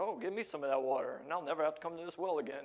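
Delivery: a little sarcastic, teasing, needling voice. Retelling a woman's reply at the well: imitating a sarcastic woman. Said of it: "she gets a little, uh, sarcastic with that".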